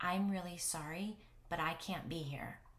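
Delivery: ordinary delivery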